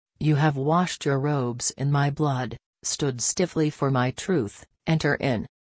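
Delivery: ordinary delivery, nothing marked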